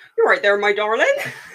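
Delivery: put-on booming, very loud West Country accent. Retelling what a friendly cricket steward said to her: West Country accent. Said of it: "I don't really know many people from the West Country".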